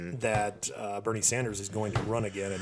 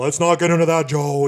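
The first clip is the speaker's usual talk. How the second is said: loud, irritated, pissed-off tone; 7 semitones higher, 7 dB louder than usual. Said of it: "he's all pissed off".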